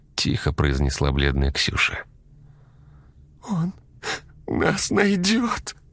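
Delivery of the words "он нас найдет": sudden, very high, frightened outcry. A daughter repeats her words to her father, exclaiming, trembling all over. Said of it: "воскликнула она и затряслась всем телом".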